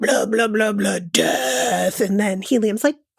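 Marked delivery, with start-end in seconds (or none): 0.0-2.0 extremely deep, slow, creaky drone. Imitating a web series character's lines: extremely deep Strindberg voice. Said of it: "has this extremely deep voice".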